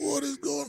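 put-on crying. Retelling a first night alone in a snowy hotel: imitating own past crying. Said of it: "I was sitting there literally crying, going".

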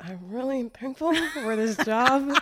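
forced, strained tone through gritted teeth. Retelling thanking God for the job while driving, through gritted teeth. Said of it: "Through gritted teeth".

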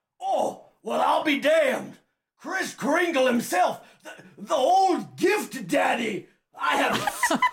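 put-on gravelly voice. Voicing Lars in a tabletop game as he looks up, gravelly Lars voice. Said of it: "And he says, / It's not supposed to be quite so gravelly".

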